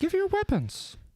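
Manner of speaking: high-pitched, domineering acted voice.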